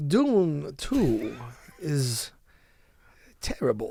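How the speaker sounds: every word drawn out very slowly. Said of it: "an old Christopher Walken".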